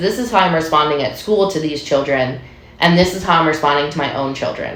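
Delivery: ordinary talk, nothing marked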